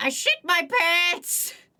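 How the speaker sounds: put-on high-pitched elderly man's voice. Quoting a meme, the speaker says the punchline in an old man voice. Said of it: "Old man voice".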